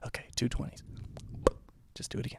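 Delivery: muttering under breath. Retelling a darts game, imitating the teacher muttering under his breath. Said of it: "I hear him under his breath go".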